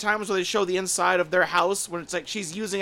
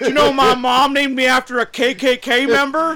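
put-on mimicked stuffed-mouth speech, higher and louder; 7 semitones higher, 10 dB louder than usual. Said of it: "mouth stuffed full of chocolates".

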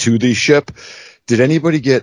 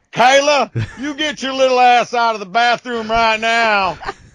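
strong put-on Southern accent, pitched very high. Telling Kayla a story, the speaker quotes her dad calling her out: imitating dad's very Southern voice. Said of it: "the most Southern I have ever heard your father".

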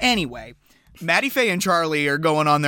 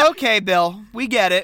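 ordinary delivery

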